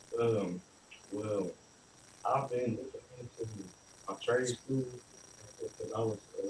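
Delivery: really soft-spoken, very quiet, hard to hear. Defendant speaking to the judge at sentencing: really soft voice. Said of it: "You got a really soft voice".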